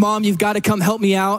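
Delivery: mock screaming and crying like a child. Retelling hiding behind the tv at four, calling his mom, imitating screaming and crying. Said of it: "I'm screaming, crying like".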